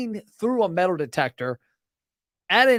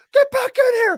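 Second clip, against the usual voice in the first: high, loud barking shout. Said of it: "the security's yelling".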